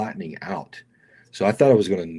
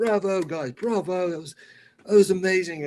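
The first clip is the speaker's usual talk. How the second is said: put-on British accent, much higher pitch, slower; 11 semitones higher than usual. Retelling how the event coordinator praised the group, the speaker imitates a British accent. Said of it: "He was a British guy".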